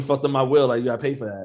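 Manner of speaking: ordinary talk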